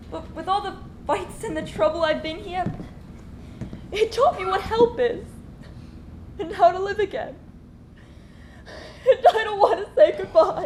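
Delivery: speaking through tears, tearful crying voice. A character in a drama speaks to others before leaving, crying. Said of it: "I'm crying".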